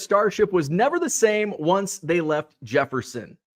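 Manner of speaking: ordinary talk, nothing marked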